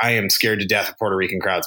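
ordinary talk

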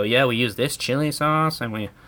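put-on English with a Mexican accent. Retelling what interviewed smugglers said: imitating a Mexican accent. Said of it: "speaking English in a Mexican accent".

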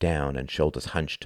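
ordinary delivery

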